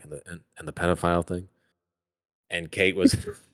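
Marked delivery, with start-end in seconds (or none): 0.0-1.5 put-on mutter under the breath, much quieter. Retelling to friends what you said back then, muttering under your breath. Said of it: "I literally said under my breath".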